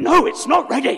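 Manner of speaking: high, loud, harsh snarling bark. Recalling refusing an offer to read his sermon, Gollum-esque snarl. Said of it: "Sort of Gollum-esque".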